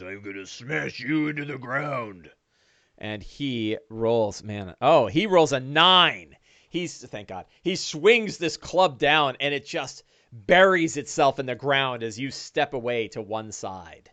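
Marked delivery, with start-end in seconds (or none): 0.0-2.3 hulking ogre character voice. Voicing an ogre as it swings its spiked club: ogre voice. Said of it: "He goes".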